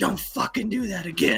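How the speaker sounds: imitated whisper. Retelling being told off quietly in front of a customer, imitating a whisper. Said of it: "whispering in my ear".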